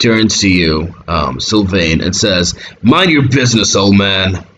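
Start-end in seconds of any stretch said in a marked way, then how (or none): 2.8-4.4 scowling, snarling, hostile tone. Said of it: "the guy scowls".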